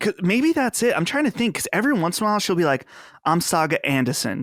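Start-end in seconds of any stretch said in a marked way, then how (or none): 3.2-4.4 put-on odd half-British accent, r dropped. Imitating how a game character sometimes sounds: imitating Saga Anderson's weird accent. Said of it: "She has a weird accent".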